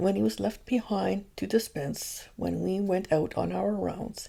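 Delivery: ordinary delivery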